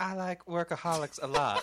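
fake girly voice, high-pitched and loud. Trying a line in a girl's voice after asking the group: put-on girl's voice. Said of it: "Should I try to do it in a girl's voice?".

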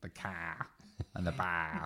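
slow, drawn-out Boston accent on car and bar. Complaining about a disliked accent in films: imitating a boston accent. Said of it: "I cannot stand a Boston accent".

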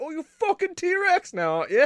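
bad exaggerated cartoonish British accent, very high pitch. Picturing the worst accent possible, speak in a bad cartoonish british accent. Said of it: "That's just like the worst accent possible".

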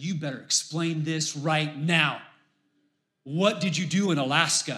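put-on worried, upset, insistent tone. Retelling how a wife confronted her husband about an Alaska charge, mock-upset demand. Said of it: "She's upset".

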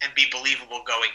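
plain

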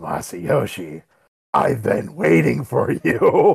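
gravelly, creaky, grandiose voice. Retelling a scene, the speaker voices the Prime Minister in a Vince McMahon-like voice. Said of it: "Why does he sound like Vince McMahon?".

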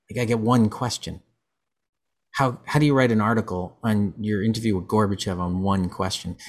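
normal talking voice

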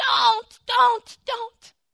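high, loud, frantic pleading voice.

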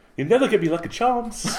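very high put-on Irish accent that comes out English. Doing a line in an irish accent when asked: attempted irish accent, sounds english. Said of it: "That's the most English Irishman I've ever heard".

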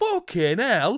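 put-on very high-pitched northern English accent, cursing tone. Retelling how Chris reacted when spotted in a game, imitating Chris's northern accent. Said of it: "in his northern accent".

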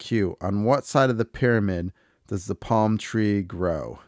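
ordinary delivery

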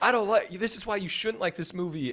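high-pitched yelling. Retelling a woman at a bar yelling her complaint: imitating a woman yelling. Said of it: "she was yelling from across the bar".

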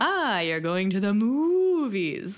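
cow-like moo stretching the words long. Retelling how a father mocks a movie outing: imitating a long deep moo. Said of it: "with a long, deep, sonorous moo".

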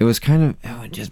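ordinary delivery

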